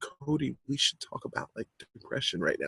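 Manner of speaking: awkward, low, very quiet near-whisper. Showing how people raise an awkward subject in a low voice. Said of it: "when we talk about it in a low voice".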